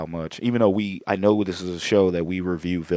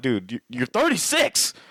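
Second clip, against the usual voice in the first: put-on mild half-yelled outburst, swooping pitch; 6 semitones higher than usual. Talking about how emotional he would have been meeting someone, yelling. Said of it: "Sorry for yelling in your ear".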